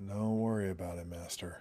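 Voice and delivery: put-on emo young-man voice. Looking at figures of Anakin and Padme, answering as Anakin in an emo voice. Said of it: "he does sound really like emo".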